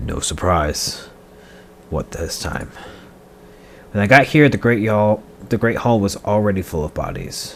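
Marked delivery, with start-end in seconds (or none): 0.0-1.1 low-voiced delivery. Tax collector character redoing a line, low voice. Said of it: "low voice".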